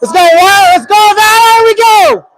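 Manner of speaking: very high, loud, rousing, cheering, supportive yell. Commentating a penalty shot, the speaker cheers Wyatt on, yelling into the mic. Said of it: "Sorry for yelling into the mic".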